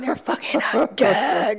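slow, drawn-out, gossipy ghost voice.

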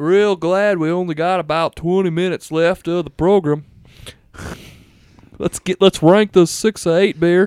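put-on Southern-accented voice. A show participant told to keep an accent for the rest of the show, in a Southern accent. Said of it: "Southern one?".

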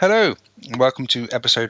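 talking with mouth full. Host opens the episode before finishing a mouthful, talking with mouth full. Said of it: "I should probably finish my mouthful first".

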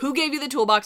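put-on high, loud, in-your-face yelling. Recounting a scene where one person yells in another's face: imitating someone yelling. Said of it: "he's yelling in his face".

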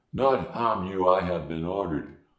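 very low, mangled, garbled voice. Narrator reads the smoking stranger's words, low-pitched garbled voice. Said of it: "had the same low-pitched garbled voice".

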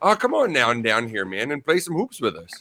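friendly, welcoming voice with swooping pitch. Retelling how pickup players invite him onto the court, imitating friendly pickup players. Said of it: "That was a good impression".

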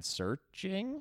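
searching said with rising pitch, upward inflection. Listing the two tied movies in a poll: upward inflection on Searching. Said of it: "I said Searching with the upward inflection".

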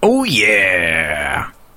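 mascot-style catchphrase voice, yeah drawn out. Trying a Kool-Aid Man impression after the other speaker: Kool-Aid Man impression. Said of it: "let me try".

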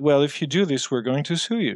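normal talking voice

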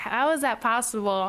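ordinary talk

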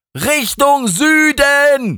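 high, loud shout. Narrator reads Emma answering in the car, shouting. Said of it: "schrie Emma".

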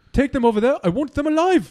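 put-on high South African accent. Discussing Darth Vader's original actor, the speaker imitates him: David Prowse South African accent. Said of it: "So he sounds like this".

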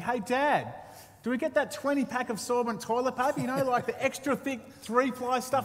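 acted yelling at top volume. Retelling calling out to a dad so everyone would hear, re-enacting a shout. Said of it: "I'd call out to the dad at the top of my lungs".

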